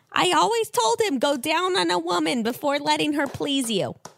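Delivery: put-on high Jersey accent. Recapping a show, speaking as Barbara about her son: Barbara in a Jersey accent. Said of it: "you've given her like a jersey accent".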